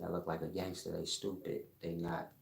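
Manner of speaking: ordinary delivery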